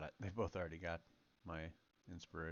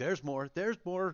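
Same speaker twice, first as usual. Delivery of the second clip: loud, rising yell. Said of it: "But I'm yelling".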